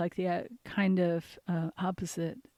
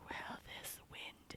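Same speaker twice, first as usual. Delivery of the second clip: even softer, hushed, barely audible. Speaker retells a man's reply after being asked to repeat his question, even softer. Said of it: "even softer".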